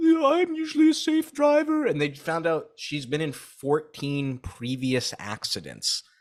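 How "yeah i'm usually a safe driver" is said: shrill, very high, very loud crying. Retelling what a driver said in court: imitating someone crying. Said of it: "she's crying, like".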